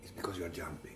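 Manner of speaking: quiet, low whisper.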